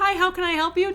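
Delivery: customer service voice. Speaker showing how they greet customers, customer service voice. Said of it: "my customer service voice".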